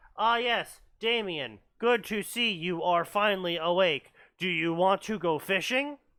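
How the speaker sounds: mechanical, robotic delivery. Mocking a story's dull family dialogue: mocking robotic voice. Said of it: "Again, robotic".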